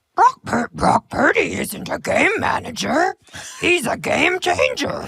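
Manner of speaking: very high, very slow, drawn-out puppet voice. Giving football analysis when asked to show a voice: Cookie Monster voice. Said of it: "Cookie Monster is the voice that I think I can do".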